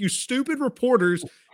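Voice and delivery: put-on shrill, very high-pitched screaming. Retelling own reaction to a press conference: imitating own screaming at TV. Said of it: "I was screaming at the T V".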